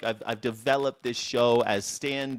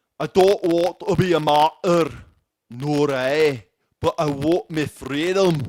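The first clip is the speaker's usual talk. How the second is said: booming, belted-out put-on Scottish accent; 4 semitones higher, 8 dB louder than usual. Quoting William Wallace as portrayed by Mel Gibson, William Wallace voice, Scottish accent. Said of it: "That's why I did the Scottish accent".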